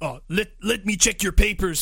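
put-on Polish accent. Describing a game's police checkpoint cutscene, voicing the police guy: polish accent. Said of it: "that's my polish accent".

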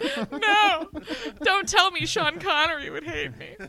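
mock dismay, high, exaggerated whine.

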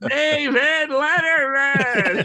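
overexcited announcer voice, very high and loud. Retelling a first show-opening announcement: imitating own overexcited announcing. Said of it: "You were so excited".

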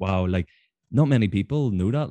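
ordinary talk, nothing marked

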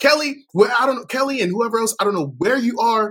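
very high, yelled calling-out. Retelling a woman yelling for someone named Kelly: imitating Punky Johnson yelling. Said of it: "she's yelling for some woman named Kelly".

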